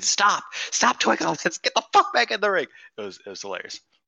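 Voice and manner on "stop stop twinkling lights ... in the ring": put-on, very high screaming outburst. Retelling how a wrestler screamed at everybody: imitating someone screaming. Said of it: "He just started screaming at everybody".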